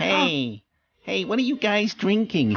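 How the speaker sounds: high, whiny cartoon voice. Retelling how he asked what they were drinking, imitating a whiny cartoon voice. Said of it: "He said in a kind of whiny cartoon voice".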